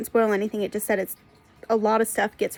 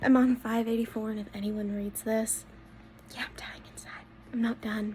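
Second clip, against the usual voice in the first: very quiet hushed whisper; 9 dB quieter than usual. Giving a reading update while the door is not closed: whispering. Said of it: "I'm whispering because my door is not closed".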